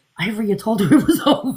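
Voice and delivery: mock laughter, cracking up while talking. Retelling a friend's words on a call: imitating someone cracking up laughing. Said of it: "Cracking up laughing".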